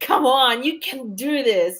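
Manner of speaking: high, half-shouted, rousing encouraging cry. Describing how they hope their book will be read, kind of shouting encouragement. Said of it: "like kind of shouting at you".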